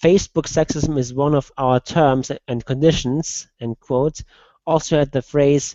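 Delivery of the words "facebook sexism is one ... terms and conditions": ordinary talk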